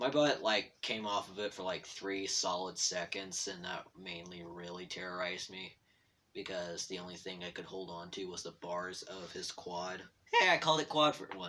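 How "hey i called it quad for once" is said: voice cracking partway through, pitched high. Telling a story about riding a quad, voice cracking. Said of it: "My voice just cracked".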